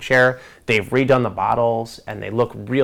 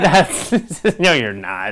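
mock, very slow speech through laughter; 5 semitones higher, 4 dB louder than usual. Retelling own reply to an offer of a Manhattan, laughing while talking. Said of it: "I laughed like that too".

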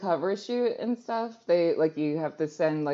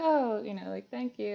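put-on shy voice, higher and quieter; 5 semitones higher, 4 dB quieter than usual. Recounting meeting a male model, imitating his shy reply. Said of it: "so sweet and shy".

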